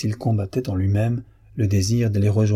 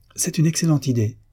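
sudden high, ringing exclamation; 6 semitones higher than usual. Narrator reading a character's reply in a French story, exclaiming. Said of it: "s'écria Victor".

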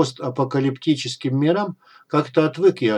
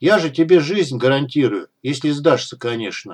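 plain

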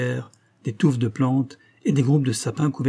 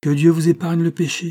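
serene, untroubled, calm, pitch lifted slightly; 5 semitones higher, 4 dB louder than usual. An old pilgrim, with rifles aimed at him, blesses the men, calm. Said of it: "dit tranquillement Hermil".

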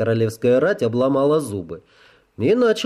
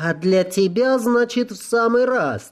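very high-pitched cry of displeasure; 9 semitones higher than usual. Narrator reads a woman answering the narrator's refusal, displeased exclamation. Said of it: "недовольно воскликнула она".

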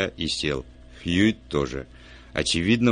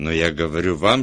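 ordinary delivery

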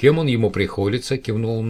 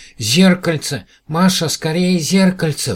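very high, loud, shrill frightened cry; 9 semitones higher, 6 dB louder than usual. The small alien Patatam calls to Masha, crying out in fear. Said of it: "в страхе закричал Пататам".

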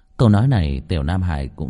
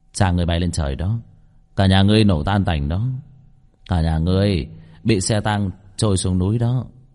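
ordinary delivery, nothing marked

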